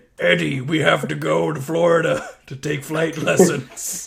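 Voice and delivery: rough, rasping, gravelly movie-monster voice. Acting out what Venom might say to Eddie in the movie, in a Venom voice. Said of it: "What accent is that?".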